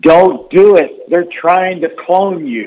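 very high, loud screamed delivery. Retelling a ballplayer's shouted warning to a pitcher: imitating someone screaming. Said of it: "he screams".

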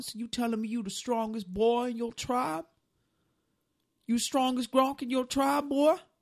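put-on sweet-sounding Southern accent. In a game, voicing a character questioning Grunk: sweet southern accent. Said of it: "It's one of them sweet southern questions".

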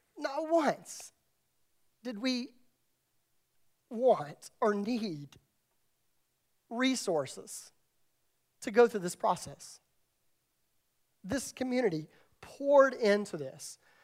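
moved, heartfelt, choked-up voice, close to tears. Speaking to the community that prayed through the process, getting emotional. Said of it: "I'm getting emotional".

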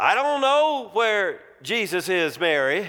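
insistent firm tone, acted. Answering an accusatory question about where a missing son is, retelling an adamant reply. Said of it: "quite adamantly back".

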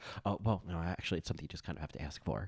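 very soft, rushed, fast mumbled speech. Recalling how Abby answered in a conversation; imitating Abby's mumbled response. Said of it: "the mumbled response".

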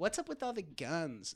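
casual, put-on British accent. Retelling what a girl from England said online: imitating a British accent. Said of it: "she said it in a British accent".

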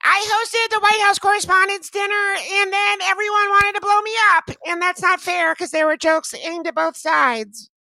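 put-on voice pushed as high as it goes. Demonstrating the highest of their impressions; Michelle Wolf impression. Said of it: "My Michelle Wolf is the highest I get".

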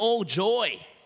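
put-on Aussie accent. Speaker leading a crowd in repeating a phrase, Australian accent. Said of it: "Say all joy like an Australian".

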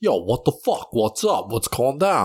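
put-on New York bro talk, Brooklyn accent. Describing band members who sound like Brooklyn bros: imitating Brooklyn bro voice. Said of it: "They all just sound like, like, Brooklyn bros".

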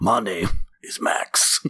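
put-on gravelly voice. Describing walking around the house after the movie: gravelly Mad Max voice. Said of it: "speaks in a gravelly voice".

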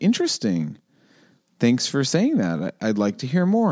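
put-on bland, pleasant, courteous, sing-song polite tone. Retelling how certain people answer an insult: imitating a pleasant deadpan. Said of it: "look at me very pleasantly with this deadpan".

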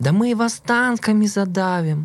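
mock drawn-out, very high-pitched, slow yell. Recounting an argument with a respected dean, retelling the dean's shout. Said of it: "декан кричав".

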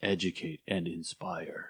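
very low, very hushed movie trailer narrator voice. Wrapping up with their key messages, the speaker uses a movie trailer voice. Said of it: "That's my trailer voice".

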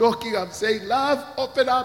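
mock, very high, loud voice bubbling with laughter. Retelling knocking on the bathroom door: retelling own words while laughing. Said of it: "and I'm laughing so loud".

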